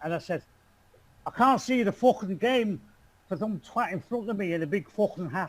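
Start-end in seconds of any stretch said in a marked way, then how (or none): 1.3-5.5 put-on Liverpool Scouse accent. Retelling a remark made in the director's box at a game, Liverpool Scouse accent. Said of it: "that's a Liverpool accent, Scout".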